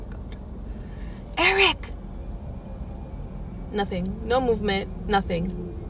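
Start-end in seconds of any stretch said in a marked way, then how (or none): 0.1-1.9 very high, urgent, whispered call. Retelling trying to get a brother's attention at 3 a.m. without waking parents, retelling a whisper. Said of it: "So I'm whispering and I'm like".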